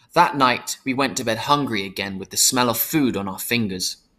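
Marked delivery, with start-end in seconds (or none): none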